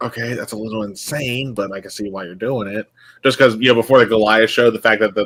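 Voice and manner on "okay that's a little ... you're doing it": very quiet, hushed half-whisper. Voicing a character who answers a player's half-whispered plan: half-whispering in character. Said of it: "he'll whisper back".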